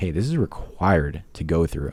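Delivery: plain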